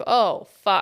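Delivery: acted shell-shocked reaction. Retelling someone's reaction on hearing they were gone five days: imitating a shell-shocked reaction. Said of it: "kind of more shell-shocked at that point".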